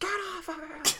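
piercing, very high, shrill scream. Retelling a real fight caught on film, imitating someone screaming. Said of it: "Norman Mailer's wife is screaming".

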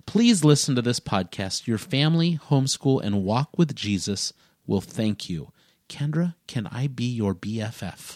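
normal talking voice

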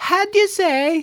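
very high-pitched fake Italian accent. Mocking Americans doing ridiculous impressions, in a fake Italian accent. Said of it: "you're doing a fake Italian thing".

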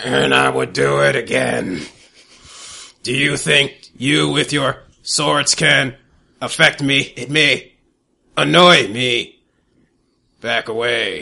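hulking rock monster voice, very slow, rough grind. Game master voicing a rock monster confronting players with swords, rock monster voice. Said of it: "You're a rock monster".

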